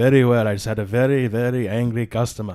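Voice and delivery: put-on Indian-English accent. Guest just welcomed in by the host, answering his greeting, Indian accent.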